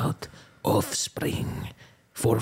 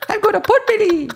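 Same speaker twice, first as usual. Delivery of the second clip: fake French woman's accent, much higher, louder; 10 dB louder than usual. Speaker does a bit a co-host mistakes for Chinese: little French woman accent. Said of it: "That's how French people say it".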